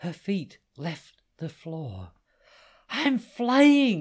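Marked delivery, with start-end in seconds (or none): 2.9-4.0 shrill, very high, very loud yell at full volume. As her wings lift her off the floor, she shouts: shouting. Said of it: "she shouted".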